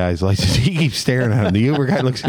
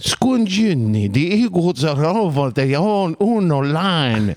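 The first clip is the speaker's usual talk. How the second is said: put-on announcer voice, higher, with Italian words; 7 semitones higher than usual. Asked for an announcer impression in Italian, doing it: Merrill Reese voice in Italian. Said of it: "give us a Merrill Reese in Italian".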